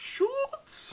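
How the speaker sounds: very high, squealing, funny comic holler. Recalling a man who always yelled a name funny: imitating his funny yell. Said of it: "he always had this really funny way he'd yell".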